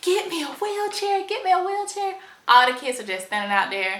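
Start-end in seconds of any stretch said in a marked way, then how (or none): 0.0-2.1 put-on, shrill, very high, repeated shouting. Retelling arriving at a locked hospital door: retelling her own yell. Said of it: "I'm yelling".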